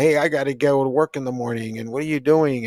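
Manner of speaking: mock cross, annoyed scolding yell. Retelling how mom yelled at them late at night: imitating mom yelling. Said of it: "And just yelling at me".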